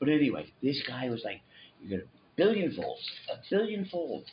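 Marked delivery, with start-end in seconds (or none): 1.8-4.3 high, hyped-up snake oil salesman pitch. Retelling a guest's promise, imitating a snake oil salesman. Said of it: "He sounded like a, hu-, a snake oil salesman".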